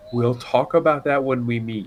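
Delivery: soft, low-key, quiet and hushed delivery. Voicing a character who turns his back on the group: speaking quietly. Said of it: "And quietly says".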